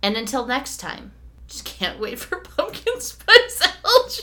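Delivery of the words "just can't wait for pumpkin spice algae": laughing through the words, raised pitch. Signing off the show, the speaker laughs while talking. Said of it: "you really tickled me".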